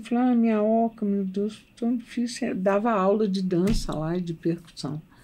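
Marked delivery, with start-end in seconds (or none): 0.2-2.5 weepy, heartbroken, tearful lamenting cry. Retelling finding the fallen hut and lamenting it: retelling own past crying. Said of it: "Eu sentei e chorei".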